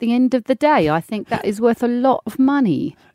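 put-on high elderly English lady voice. Playing an Antiques Roadshow expert when asked: old English lady voice. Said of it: "put on your old, old lady voice".

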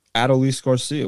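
ordinary talk

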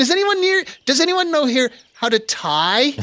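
put-on helpless, very high call.

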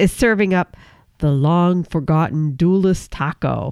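put-on spooky, ghostly haunted-ride host character voice. Describing a dish on a Haunted Mansion list, in a Ghost Host voice. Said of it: "I don't know why I use a different voice for that".

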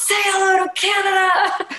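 put-on very high, drawn-out, full-lung yell. Retelling shouting to a passing artist from the reporters' scrum: retelling a yell at full volume. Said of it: "I just yelled at the top of my lungs".

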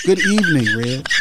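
put-on polished, formal, professional host voice. Opening the podcast more professionally as asked: mock professional greeting. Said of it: "wanted me to start it a little bit more professional".

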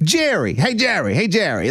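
put-on New York accent, loud calling out. Imitating a sitcom character calling a friend: George Costanza's New York accent. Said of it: "a New York accent".

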